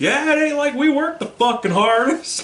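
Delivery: mock very high yell. Retelling what a drunk guy yelled when called in last: imitating someone yelling. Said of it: "he yells".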